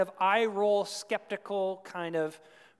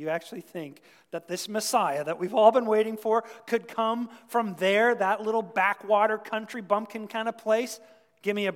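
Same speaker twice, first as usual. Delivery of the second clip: ordinary delivery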